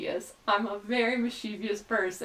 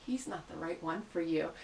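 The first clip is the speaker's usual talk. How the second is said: soft, intimate half-whisper close into an ear; 4 semitones lower, 12 dB quieter than usual. Retelling half-whispering into a stranger's ear at a crowded event: retelling an intimate half-whisper. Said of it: "intimately and whisper into her ear".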